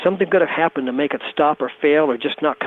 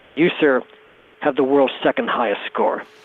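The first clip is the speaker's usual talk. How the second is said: mock grave, solemn, somber, serious tone; 2 semitones lower than usual. Retelling telling a caller on the phone his score: somber, serious tones. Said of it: "in somber, serious tones".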